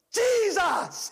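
very high, frightened, long drawn-out fearful cry. Retelling crying out in bed during a night of fear: imitating a fearful cry. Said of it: "I had fear all over me".

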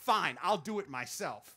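ordinary delivery

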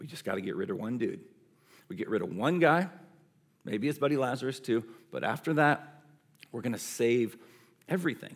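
self-satisfied, leaning-back, smug, laid-back tone. Imagining the high priest Caiaphas speaking to the others: smug Caiaphas voice. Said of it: "imagine him kind of smug, sitting back".

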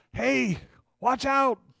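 mock shout, pitched very high. Picturing a drifter floating toward a waterfall, imitating someone yelling a warning. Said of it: "somebody yells at you".

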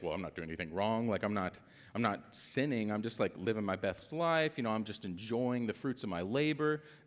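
normal talking voice

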